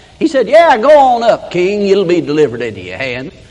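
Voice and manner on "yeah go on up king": mock sarcastic, scornful, taunting sing-song. Retelling a prophet's answer to the king: imitating a mocking reply. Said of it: "He's mocking the king".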